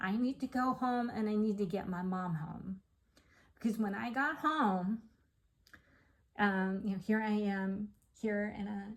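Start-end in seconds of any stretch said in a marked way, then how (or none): none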